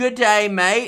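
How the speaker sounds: shoddy, bad put-on Australian accent. Answering a hello sent from Australia, in a bad Australian accent. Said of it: "that's my shitty Australian accent".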